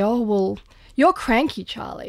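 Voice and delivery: normal talking voice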